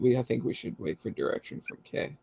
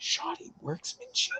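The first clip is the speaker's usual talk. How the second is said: very high, hushed mutter under the breath; 5 dB quieter than usual. Feeling the sword on the back, in character: muttering under breath. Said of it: "under my breath".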